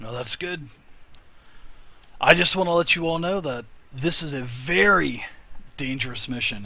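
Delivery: put-on dwarf accent slipping into a Spanish-sounding accent.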